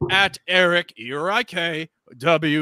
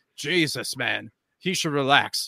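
ordinary talk

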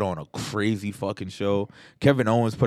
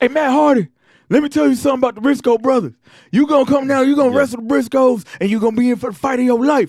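put-on country wrestler promo voice, higher and louder; 10 dB louder than usual. Retelling a wrestling promo, imitating Jay Briscoe promo. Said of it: "their promos would be like Jay Briscoe standing there like".

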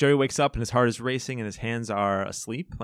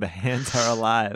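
ordinary delivery

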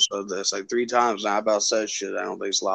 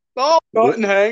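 put-on mumbling cartoon voice, higher and louder; 13 semitones higher, 7 dB louder than usual. Answering Hank in a scene from the show: Bill impression. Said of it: "when we just did that impression".

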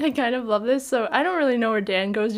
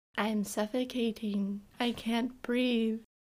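put-on eerie child voice, quieter and slower; 9 dB quieter than usual. Quoting what the voice in the bag says, imitating a creepy child voice. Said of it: "I love the child voice that it uses. It's really creepy".

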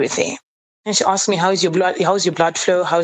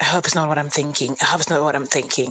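mock muttering under the breath; 2 semitones lower than usual. Retelling what a friend kept saying: imitating someone muttering under her breath. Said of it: "kept saying under her breath".

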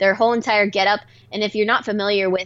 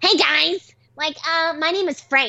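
high, put-on boy fairy character voice; 7 semitones higher than usual. Retelling meeting a boy fairy character, in a put-on boy fairy voice. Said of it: "we met a boy fairy and he's just like".

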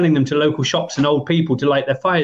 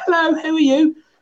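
put-on tiny, very high little kid voice; 13 semitones higher than usual. Recalling greeting a stranger in a car at age twelve: little kid's voice. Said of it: "This little sort of kid's voice".

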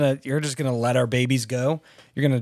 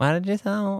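put-on voice rising up into a girly voice; 7 semitones higher than usual. Showing how he talks to you in a text, imitating him like a Girl Scout. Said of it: "This is how he talks to me in my voice".

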